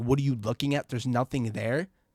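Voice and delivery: ordinary talk, nothing marked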